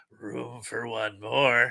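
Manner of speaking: really creepy voice, slow and flat.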